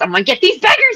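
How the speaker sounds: very high, manic, frantic outburst. Describing a line from a clip, imitating it a little frantic and maniacal. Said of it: "a little freaking frantic and maniacal".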